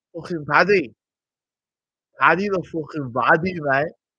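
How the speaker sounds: rough, not-great put-on Scouse accent. Announcing that paddy is here, trying out a scouse accent. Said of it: "See, again, mate".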